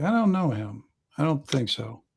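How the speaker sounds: quiet, softly spoken delivery. Game narrator voicing a woman who answers the players: speaking quietly. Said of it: "she kind of says quietly".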